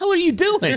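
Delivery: imitated angry outburst. Retelling reacting when a brother gave a caught ball away: imitating own angry teenage outburst. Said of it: "like a pissed sixteen-year-old".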